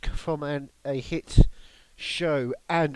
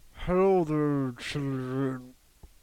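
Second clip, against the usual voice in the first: cartoon chef character voice; 2 semitones lower than usual. Joking about a voice that started as Charlie and the Chocolate Factory: Chef from South Park voice. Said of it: "we quickly became just Chef from South Park".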